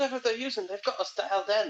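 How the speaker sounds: high-pitched, yelled call-out. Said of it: "he's just yelling out to".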